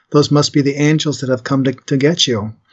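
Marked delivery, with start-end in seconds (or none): none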